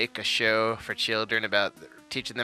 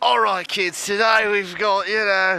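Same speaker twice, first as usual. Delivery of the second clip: full put-on Australian accent; 10 semitones higher, 8 dB louder than usual. Showing how a kids' reptile show would be hosted: full Australian accent. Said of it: "I was gonna be like a full Australian".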